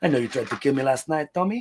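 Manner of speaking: thick Latin accent impression. Retelling a comedian's bit quoting his mom: imitating a mom's thick Latin accent. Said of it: "very Latin mom with a very thick accent".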